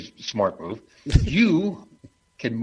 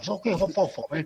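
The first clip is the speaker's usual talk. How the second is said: put-on puckered-up British accent, higher and quieter; 6 semitones higher, 4 dB quieter than usual. Mocking the puckered-up British accent that King Charles does: King Charles impression. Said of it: "your King Charles does. You know, it's kinda like".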